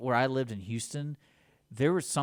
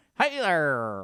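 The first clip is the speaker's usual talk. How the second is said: put-on loud old-timey, old-fashioned man's voice; 3 semitones higher, 5 dB louder than usual. Imitating a cat whose meow sounded like an old-timey guy voice. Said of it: "I still heard that one".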